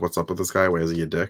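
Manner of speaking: imitated whispering voice. Retelling two students whispering about their teacher in class: imitating a whisper. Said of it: "him and Jack are kinda whispering".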